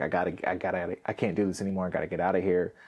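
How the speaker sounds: put-on tearful crying voice. Retelling a parent's final fight, mom packing up: imitating mom crying. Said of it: "packing stuff up and then crying".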